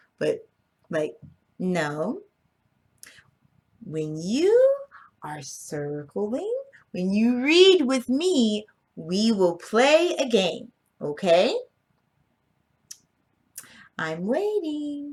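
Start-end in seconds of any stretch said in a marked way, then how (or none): 1.6-15.2 kind, very slow, sing-song nice mama voice. Demonstrating how to tell kids no in a nice way: nice mama voice. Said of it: "get the mama voice in a nice way".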